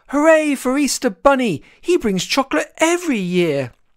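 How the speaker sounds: very high, gleeful, joyful cheering cry. Narrator reads the woodland creatures cheering for Easter Bunny, joyful cheer. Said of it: "cried with joy".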